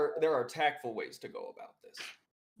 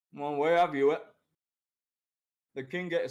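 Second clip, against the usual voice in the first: talking while chewing, mouth full, louder; 4 dB louder than usual. Answering another speaker's question, talking while chewing. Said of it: "I'm I'm chewing as I speak".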